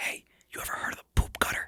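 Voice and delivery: soft, secretive whisper. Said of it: "leans over and whispers".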